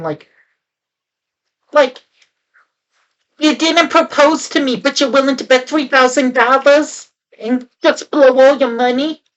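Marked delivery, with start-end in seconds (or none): 3.4-9.2 brassy, laid-on, put-on New York accent. Imitating the dancer from a movie: imitating a new york accent. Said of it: "a New York accent or something".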